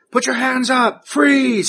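very high, barked, yelled voice. Voicing a police officer bursting in with a gun: police officer yelling. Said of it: "he starts yelling".

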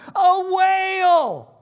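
very loud, shrill, drawn-out cry, high pitched. Retelling a brother spotting a whale at the beach: imitating Ethan's loud exclamation. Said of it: "kind of loudly exclaims".

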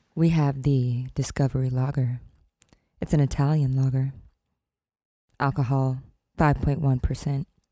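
mock pop star diva tone. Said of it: "I'll do my [name] voice".

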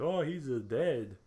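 fake Austrian accent. Retelling a film plot, voicing the tenant's reply in a bad german or austrian accent. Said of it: "That's a bad German or Austrian accent".

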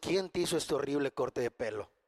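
very low, hushed half-whisper. Telling a joke where the pope half-whispers to a man kissing his ring, half-whispering. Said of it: "el papa me susurró en los oídos".

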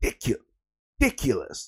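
game commentator-style announcer call. Repeating a word on purpose: Halo commentator voice. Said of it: "I sound like the fucking Halo commentator".

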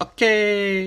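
fake Greek accent, pitched high.

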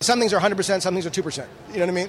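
fast, rapid-fire talking. Explaining to a listener that he has to do the math, fast talking. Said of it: "But he's so fast".

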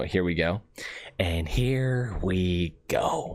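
put-on voice, very slow, every word drawn out. Showing a line from a gif he can do: Joker voice. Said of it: "you know the one gif where he says".

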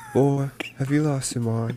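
put-on British accent. Repeating a quoted line during a trivia game: put-on British accent. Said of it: "You do, like, a British accent".

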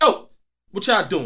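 high, hollered call-out yell. Retelling how a guy at the gas station screamed at them: imitating someone screaming. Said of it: "he screamed on him like".

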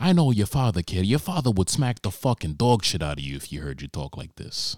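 put-on heated man's voice. Imitating a heated man telling someone off: imitating heated Chris Cuomo. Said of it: "That's Chris Cuomo right now. He's heated".

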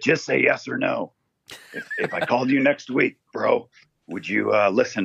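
gruff, friendly voice. Retelling what a man said when he called, in a gruff impression. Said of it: "but I get the gruffness".

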